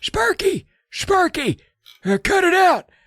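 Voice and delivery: dry, parched, whispery, very high voice. Retelling a boy who turned old yelling at his dog: dry whispery old-man voice. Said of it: "all dry and whispery".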